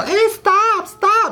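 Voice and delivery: very high, loud, shrill, pleading yell.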